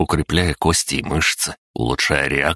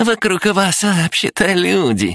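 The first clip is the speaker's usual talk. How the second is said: very high, shrill, squeaky, teasing parrot voice. A guy mimics a girl's complaint back at her, in a squeaky mocking voice. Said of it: "передразнил ее рыжий парень писклявым голосом".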